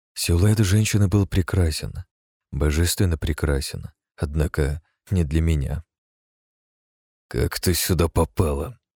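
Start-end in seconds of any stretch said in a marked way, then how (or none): 7.3-8.7 squeamish, disgusted voice, slower. The narrator answers a woman who has appeared before him, squeamish. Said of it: "брезгливо отозвался я".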